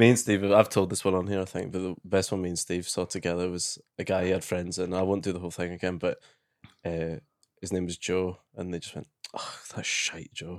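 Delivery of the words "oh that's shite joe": soft, breathy, heartfelt, genuinely disappointed voice. Retelling what a guy's friends said to him, imitating their genuine disappointment. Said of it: "they just sounded so genuinely disappointed, like a mother".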